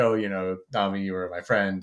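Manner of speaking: normal talking voice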